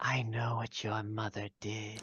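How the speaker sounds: very hushed, half-whispered woman's voice. Voicing a mysterious half-whispering lady heard from a mushroom: half-whispering lady's voice. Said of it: "Whispers like a lady who".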